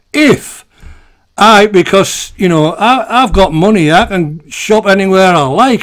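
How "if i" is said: the word if strongly stressed. Asking an opinion on a ludicrous situation: stress on if. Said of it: "if I must stress the word if".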